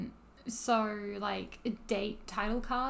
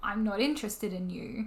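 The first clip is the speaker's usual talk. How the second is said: ordinary delivery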